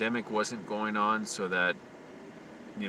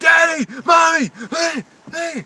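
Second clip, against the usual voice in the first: very high, loud, desperate scream. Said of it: "just screaming".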